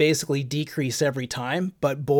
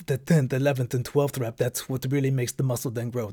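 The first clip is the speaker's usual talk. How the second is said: bad, put-on Austrian accent. Quoting Arnold from the documentary Pumping Iron: bad Arnold Schwarzenegger accent. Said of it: "That's my bad accent of Arnold Schwarzenegger".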